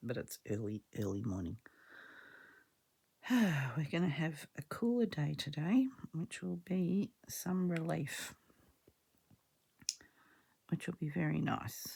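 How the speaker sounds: relaxed, easy, normal talking voice. Early morning, speaking while someone is still in bed: talking quietly. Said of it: "I'm talking quietly because Paul's still in bed".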